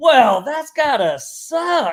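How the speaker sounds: put-on Southern country drawl, slow and high. Imitating a salesperson on a sales call: imitating a Southern country accent. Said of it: "a Southern country accent".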